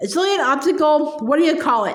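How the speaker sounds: ordinary delivery, nothing marked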